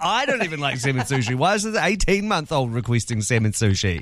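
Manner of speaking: normal talking voice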